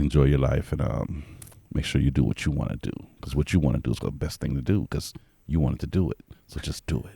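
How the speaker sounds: polished, proper put-on telephone voice. Speaker asked to say a last thing to listeners, proper telephone voice. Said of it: "say a last thing with that proper telephone voice".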